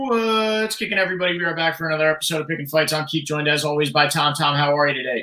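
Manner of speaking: high-pitched, auctioneer-style patter. Opening an episode of Picking Fights, the host greets the co-host: auctioneer impression. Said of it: "That was my best auctioneer impression".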